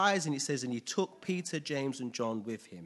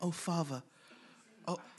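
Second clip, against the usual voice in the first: mock-reverential prayer voice, much quieter; 4 semitones higher, 4 dB quieter than usual. Mocking how some people pray aloud, put on a mock-reverential prayer voice. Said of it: "really, really reverential".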